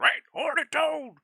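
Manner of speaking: bad, shrill, high, loud cartoon squeal. Reading out a viewer's comment aloud: terrible Yosemite Sam impression. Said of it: "That was a terrible Yosemite Sam".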